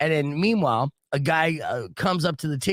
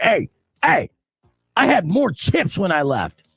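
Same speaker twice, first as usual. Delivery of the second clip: acted, loud, high-pitched, indignant voice; 5 semitones higher, 7 dB louder than usual. Retelling a drunk player's complaint about his missing chips: imitating an indignant complaint. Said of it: "immediately gets all indignant and just like".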